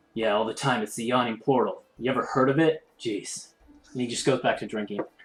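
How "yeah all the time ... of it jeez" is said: hissing, hissy reptilian creature voice. Game master voices a red dragonborn turning to a player: hissing dragonborn voice. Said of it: "gives you like a hiss of his tongue and he goes".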